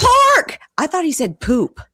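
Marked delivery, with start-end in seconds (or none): 0.0-0.6 very high, loud mocking voice. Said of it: "he goes".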